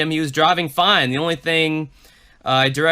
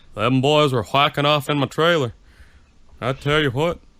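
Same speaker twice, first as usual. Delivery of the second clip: put-on old person voice. Imitating an old neighbor who wants his paper boy: Hank Hill impression. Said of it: "best Hank Hill impression".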